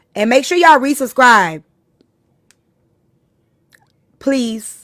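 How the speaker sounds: slightly bossy tone. Streamer asking viewers to resubscribe, sounding a little bossy. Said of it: "I sound a little bossy when I said that".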